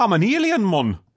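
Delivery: exaggerated Geordie accent. Chatting about his accent, imitating him; exaggerated geordie accent. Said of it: "that accent you just did".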